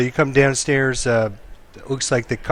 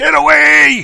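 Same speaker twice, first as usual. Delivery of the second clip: put-on drunk man shouting, higher and louder; 8 dB louder than usual. Voicing a severely drunk patron yelling at a player: drunk man yelling. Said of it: "starts yelling at you".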